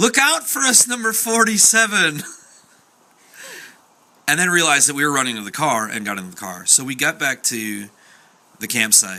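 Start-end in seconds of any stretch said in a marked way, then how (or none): 0.0-2.2 very high, loud, shrieking scream. Retelling a night at a campsite, the speaker repeats what a woman screamed: imitating her screaming. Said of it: "she started screaming".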